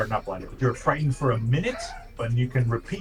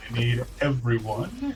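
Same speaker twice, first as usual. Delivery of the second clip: plain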